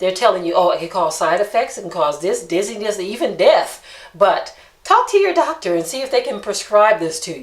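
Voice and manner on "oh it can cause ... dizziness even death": normal talking voice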